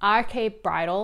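put-on American accent. Naming a bridal store in New York City, American accent. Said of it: "I'm just trying to bring my American accent out here".

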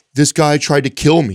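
put-on hysterical sobbing. Retelling a phone call where she said this: imitating hysterical crying. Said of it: "she's hysterically crying".

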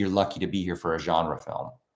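plain

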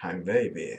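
brutish, macho put-on Spanish voice. The speaker shows how women picture a man on a first date: brutish Spanish macho voice. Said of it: "Like a Spanish macho with a rose. And brutality voice".

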